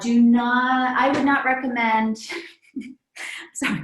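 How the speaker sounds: talking through laughter. Speaker explaining a practice-ball exercise, laughing while talking. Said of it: "I'm laughing because".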